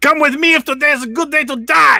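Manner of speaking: shrill, loud cartoon chihuahua squeal. Urging someone to come along, Ren voice. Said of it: "sounded a little more like Stimpy".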